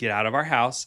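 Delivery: ordinary delivery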